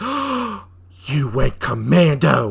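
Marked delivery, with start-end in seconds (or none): 1.1-2.5 shocked gasp, then loud blurted outburst. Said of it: "You sound surprised".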